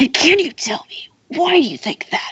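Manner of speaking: high, whispered smoker's voice impression.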